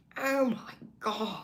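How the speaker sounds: very high-pitched, full put-on star voice. Practicing an impression that you say needs daily work, do a Jennifer Coolidge impression. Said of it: "I'm working my Jennifer Coolidge impression".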